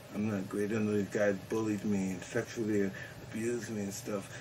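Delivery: speaking very quietly. Talking with two radio hosts, the speaker goes very quiet. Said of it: "You notice how he got real quiet here?".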